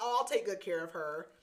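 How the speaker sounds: ordinary talk, nothing marked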